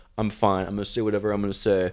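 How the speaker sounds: ordinary talk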